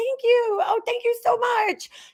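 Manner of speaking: very high, gushing, sucking-up sugary sweetness. Retelling thanking a girl with an attitude to keep her calm: mock-fawning thank-you. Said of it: "I'm like sitting there like kissing her ass".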